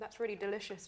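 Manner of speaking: words muffled by a mouth full of food. Speaker tasting a panna cotta dessert, talking with mouth full. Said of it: "I'm talking with my mouth full".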